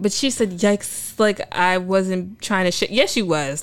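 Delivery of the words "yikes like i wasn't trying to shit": ordinary talk, nothing marked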